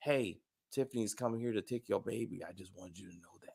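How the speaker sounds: very quiet, barely audible half-whisper. Retelling what a man half-whispered to a closed door, imitating a half-whisper. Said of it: "he whispers to the door".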